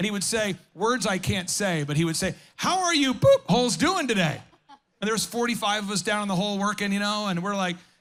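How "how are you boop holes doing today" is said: put-on yell, higher and louder. Retelling how a boss on a high form called down to workers: imitating a boss yelling. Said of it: "he's yelling at us 'cause he's up on a form".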